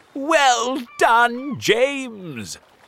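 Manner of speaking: shrill, very high shout with one word stretched out. Reading the old green grasshopper calling out to James: shouted. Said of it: "Shouted the old green grasshopper".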